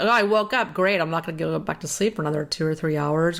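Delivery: ordinary delivery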